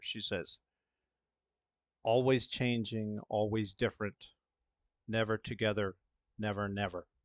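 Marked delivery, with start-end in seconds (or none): 2.0-7.0 low hushed tone, still voiced. Narrator voicing a character who glances toward the stairwell noise, in a hushed tone. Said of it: "in kind of a hushed tone".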